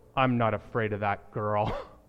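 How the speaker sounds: very low, grumbly, tough-sounding put-on voice. Retelling what your child said to you, in a low, grumbly voice. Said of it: "in a low, grumbly voice".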